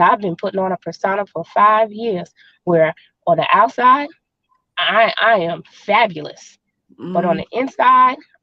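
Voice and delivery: ordinary talk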